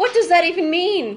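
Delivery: high-pitched, panicky, anxious delivery. A character has just been given grave news and reacts in a panicky tone. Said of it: "BLE asked in a panicky tone".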